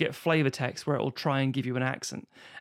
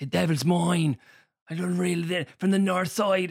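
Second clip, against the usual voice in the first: heavily laid-on Dublin accent; 4 semitones higher than usual. Imitating Colin Farrell playing a criminal: Colin Farrell Dublin accent. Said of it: "I'll do a Dublin accent".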